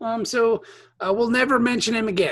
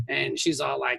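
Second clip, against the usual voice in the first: ordinary talk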